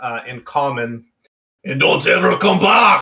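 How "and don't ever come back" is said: very gruff, raised shouting voice. Game master voicing a hobgoblin yelling at the players, in a very gruff yell. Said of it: "yells in a very gruff voice".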